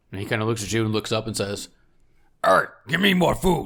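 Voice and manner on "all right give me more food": high-pitched giant voice, yelling loudly. Voicing a giant demanding more food from the party: giant yelling. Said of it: "He just starts yelling at each of you".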